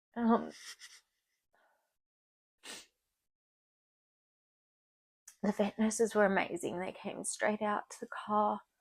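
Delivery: choking up, fighting back tears, near bawling. Telling how the vet nurses came straight out to the car, choking up. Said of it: "I just want to absolutely bawl".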